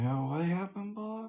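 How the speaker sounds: soft, very high, sleepy voice mid-yawn. Teasing the other speaker for sounding tired, imitating a tired yawn. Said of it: "because you're yawning and you're like".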